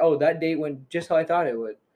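ordinary talk

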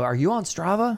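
put-on high, loud calling yell. Runner retelling calling out to a passing runner: retelling a yell. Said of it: "And I yelled".

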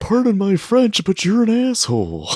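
voice going very high, loud and swooping. Retelling a favorite movie line: Cameron voice. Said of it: "every time I try to do that voice, I end up just sounding like Elf".

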